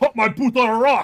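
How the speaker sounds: put-on Scottish-accented voice. Voicing a game line about catching a boot: Scottish accent. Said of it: "are they Scottish now?".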